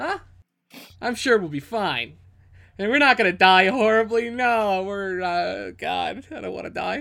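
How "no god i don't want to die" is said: very slow panicked voice, long drawn-out "no". Just before a companion tells them to get a grip: panicked. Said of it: "Get a grip on yourself".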